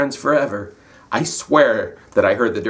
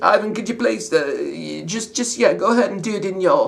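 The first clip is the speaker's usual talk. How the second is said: high-pitched put-on English accent; 9 semitones higher than usual. Retelling the director's request, English accent imitating the director. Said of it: "the director that with an English accent".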